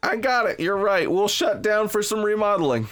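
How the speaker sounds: sarcastic, mock-agreeable staff voice. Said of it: "This is sarcasm".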